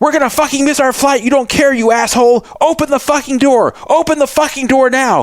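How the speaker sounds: very high, furious, enraged yelling, acted out. Retelling how passengers yelled at a bus driver: imitating passengers yelling. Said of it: "And they were yelling".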